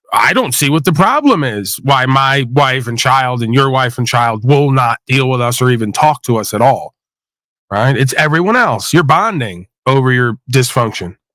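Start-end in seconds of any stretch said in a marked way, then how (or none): none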